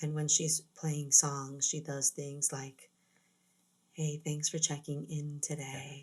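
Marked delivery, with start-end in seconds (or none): 3.9-6.0 beautiful, sultry radio DJ voice, lower and quieter. Describing a sultry woman who plays songs on the radio, doing her beautiful radio voice. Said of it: "She has this very beautiful radio voice".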